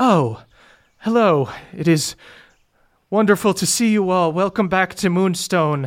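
poised, cool and collected delivery. Voicing a character who regains composure on seeing visitors, cool composed greeting. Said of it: "regains kind of her cool demeanor".

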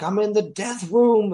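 put-on, very high screamed yell. Recounting being swarmed and killed by monsters in Quake, retelling own screaming. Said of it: "And I was just screaming like".

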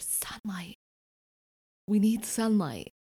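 hushed half-whisper under the breath. During a game, speaking in character to Eowyn, half-whispering. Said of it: "I whisper".

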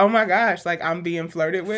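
ordinary delivery

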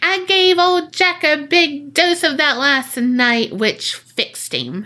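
high storybook witch voice, villain style. Retelling what an entity said, the speaker acts out its words in a Disney witch voice. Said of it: "it sounds like a Disney witch".

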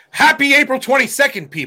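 loud showman delivery. Opening the podcast, copying the co-host's show style: loud show voice. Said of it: "Look how loud you got".

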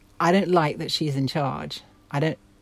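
ordinary talk

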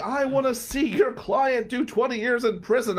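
high, shrieking, emphatic ranting scream. Retelling how a colleague replied to a post: imitating someone screaming. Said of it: "starts screaming at me".

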